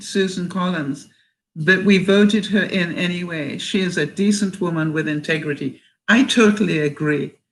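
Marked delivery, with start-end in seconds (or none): none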